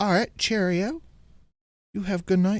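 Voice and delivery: put-on British accent. Retelling a video of a British guy saying bye to friends: imitating a British accent. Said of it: "it's this British dude".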